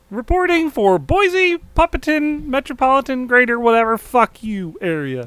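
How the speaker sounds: fake, high frog voice. Riffing on a bit someone else wrote, the speaker talks in a fake Kermit voice. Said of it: "a fake Kermit voice".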